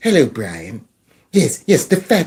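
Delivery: low cartoon voice with swooping pitch. Mocking an arrest by picturing Stewie Griffin: Stewie Griffin voice. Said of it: "Stewie Griffin over there on the Family Guy".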